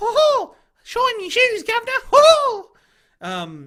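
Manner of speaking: squeaked high, loud and slow. Mid-discussion about storytelling, the speaker breaks into a Pommy Mickey Mouse voice. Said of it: "now do Pommy Mickey".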